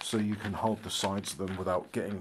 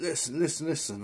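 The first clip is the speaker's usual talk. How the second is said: put-on drunk woman voice, higher; 7 semitones higher than usual. Retelling a lady who came into the voice chat; imitating a drunk lady. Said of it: "why is it that drunks".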